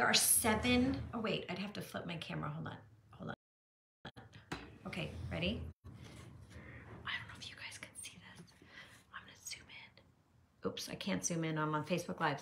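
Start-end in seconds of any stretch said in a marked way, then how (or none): 1.1-10.7 soft unvoiced whisper. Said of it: "no idea why I'm whispering".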